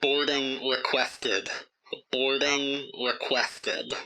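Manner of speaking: extremely staticky, crackling transmission voice. A hailing frequency answers a pilot in the cockpit: extremely staticky voice. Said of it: "You hear like an extremely staticky voice".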